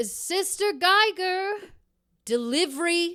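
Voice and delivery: loud, very high-pitched yelling. A woman looks up at a steeple and calls for someone, yelling. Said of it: "she yells".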